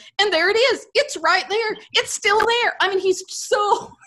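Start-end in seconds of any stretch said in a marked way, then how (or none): 0.2-2.7 put-on thrilled, eager, excited exclaiming, repeated. Retelling what a man kept saying on camera at Halloween: imitating someone excited. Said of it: "He's so excited that he keeps saying".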